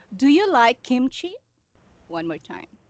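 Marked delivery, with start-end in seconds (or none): 0.2-1.4 rising pitch on "kimchi". Teaching yes-no question intonation with an example: rising pitch on kimchi. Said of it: "the yes no question, the intonation goes up".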